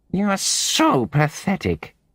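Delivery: shrill, very high, nasal, drawn-out tone. A narrator voices Molly's cutting remark to Dick, in a high-pitched nasal voice. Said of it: "in her high-pitched nasal voice".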